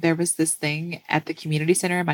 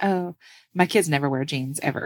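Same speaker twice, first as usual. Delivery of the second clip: usual speaking voice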